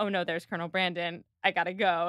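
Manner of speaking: ordinary talk, nothing marked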